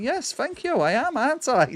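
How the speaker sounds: high-pitched character voice swooping up and down. Voicing a game character, Susan, thanked for looking stunning: voicing Susan. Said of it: "And Susan's all like".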